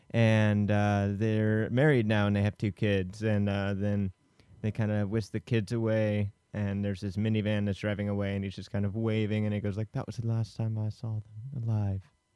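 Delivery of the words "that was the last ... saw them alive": grave, funereal, very solemn put-on British accent. Describing a scene where a man waves as a minivan drives away; solemn British accent. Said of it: "I chose British accent for the very solemnness".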